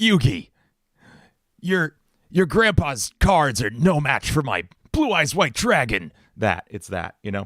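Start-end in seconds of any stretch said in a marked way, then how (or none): 0.0-6.1 high-pitched put-on anime-style voice. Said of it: "it's my it's my Kaiba voice".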